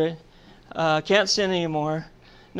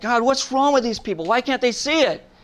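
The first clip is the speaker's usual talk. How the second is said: mock heated, angry voice, plainly acted; 6 semitones higher than usual. Retelling arguing angrily with God after a class: imitating angry arguing with God. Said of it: "arguing with God".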